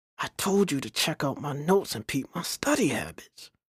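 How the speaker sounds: soft, hushed half-whisper under the breath. A student answers a classmate across the aisle during a test, half-whispering. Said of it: "returned a whispering Chris".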